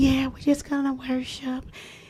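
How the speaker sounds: soft, syrupy, sugary put-on sweet voice. Retelling a phone call with a woman staying at worship, imitating her sweet voice. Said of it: "with her sweet voice having self".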